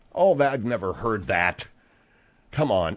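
low, scornful, dismissive scoff of disbelief. Brushing off the other speaker's claim in conversation, disdainful. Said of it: "it's very disdainful".

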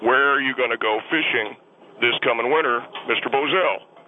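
plain

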